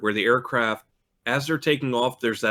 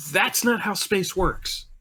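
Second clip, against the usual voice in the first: restrained, high-pitched half-yell; 8 semitones higher than usual. Recalling screaming at a movie in front of the kids, retelling screaming at a movie. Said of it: "I'm screaming at this movie going".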